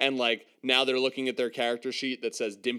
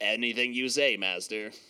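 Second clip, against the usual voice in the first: ordinary talk, nothing marked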